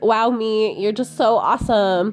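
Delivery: put-on gushing, bubbly Valley Girl voice. Praising oneself on good days, in a bubbly valley girl voice. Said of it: "I'm like talking in this Valley Girl voice because it's like my bubbly, I love myself voice".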